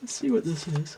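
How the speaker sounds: words stretched out through a yawn. Reading a card spread while getting sleepy, yawning. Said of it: "Sorry, I'm yawning".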